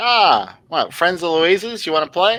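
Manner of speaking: put-on brassy, booming New York accent, pitched way up. Voicing a man greeting the players as they approach, loud brash New York accent. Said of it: "loud, brash New York accent".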